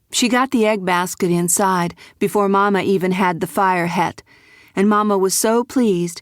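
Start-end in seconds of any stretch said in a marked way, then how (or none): none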